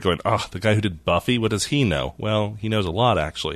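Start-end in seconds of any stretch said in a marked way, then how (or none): none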